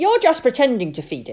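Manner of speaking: very loud, contemptuous tone. Narrator reads Sophie speaking to Dawn, scornfully. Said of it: "said Sophie scornfully".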